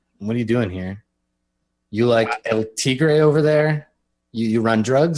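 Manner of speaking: usual speaking voice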